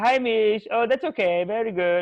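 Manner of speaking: very slow, very drawn-out, sweetly nice lady voice. Retelling what a sweet lady would say about late rent: imitating Tracy Dang being nice. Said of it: "she'd be all nice to me".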